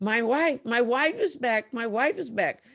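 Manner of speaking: tearful, weeping man's high crying voice. Retelling what a husband said after his wife was healed: imitating a crying husband. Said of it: "her husband is crying, going".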